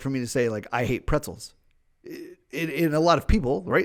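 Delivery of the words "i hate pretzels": normal talking voice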